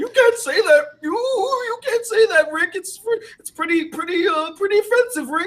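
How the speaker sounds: very high, stuttering character voice. Acting out a cartoon scene about offensive words: Morty voice. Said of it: "good job with the voices".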